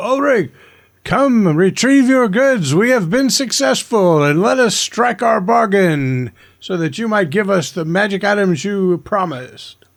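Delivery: loud, booming voice. A player's character calls out to Ulrich, booming voice. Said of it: "I'll use thaumaturgy again to make my voice booming".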